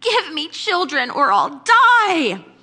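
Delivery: slow, loud, high whine with die drawn out. Reading scripture aloud, voicing Rachel's plea to Jacob: whiny Rachel voice. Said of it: "Can you hear the whine in her voice?".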